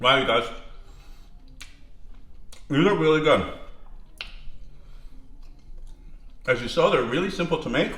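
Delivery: speaking with mouth full. Tasting the finished tortilla dish for viewers, talking while chewing. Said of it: "I'm like chewing in your ear".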